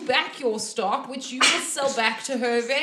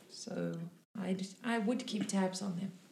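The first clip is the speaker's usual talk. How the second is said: soft, hushed, much quieter; 5 semitones lower, 11 dB quieter than usual. Caraxes talks to the players while walking them to the kitchen, speaking softly. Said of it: "quite softly".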